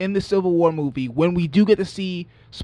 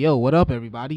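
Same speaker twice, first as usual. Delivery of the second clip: put-on cocky superhero voice, lower pitch; 4 semitones lower than usual. Showing how the line should sound: cocky sarcastic Spider-Man voice. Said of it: "cocky and maybe just a little bit arrogant and sarcastic".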